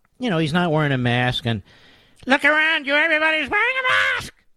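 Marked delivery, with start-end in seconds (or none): 2.3-4.3 yelling in a very high voice. Retelling a shopper yelling at the governor: imitating a woman yelling. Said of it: "she starts yelling at the governor".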